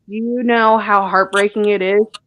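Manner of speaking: plain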